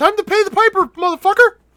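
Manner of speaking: very high, loud, squeaky cartoon voice. In a group voice chat, one member yells at the others in a Mickey Mouse voice. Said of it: "[name]'s Mickey Mouse voice".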